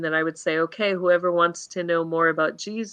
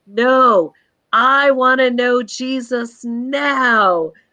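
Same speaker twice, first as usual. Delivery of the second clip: put-on very slow, loud, high, drawn-out child's yell; 7 semitones higher, 6 dB louder than usual. Retelling how a child shouted about wanting to know jesus now: imitating a child shouting. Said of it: "starts shouting at the top of his voice".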